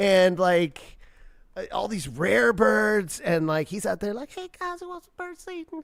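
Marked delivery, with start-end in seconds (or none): 4.3-5.8 very high-pitched voice. Describing Mike Tyson with his birds: Mike Tyson impression. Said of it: "Your Tyson impression is incredible".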